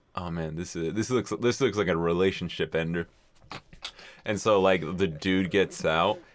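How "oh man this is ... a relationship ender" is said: normal talking voice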